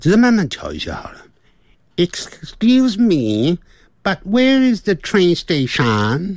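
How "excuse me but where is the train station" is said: slight Filipino-tinged accent, higher. Trying out accents on an English phrase, slightly Filipino accent. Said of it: "有点菲律宾腔".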